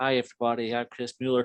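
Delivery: slight, lightly done put-on American accent. Imagining the author arriving with copies of his book: Chris Mueller's American accent. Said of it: "with his wee American accent".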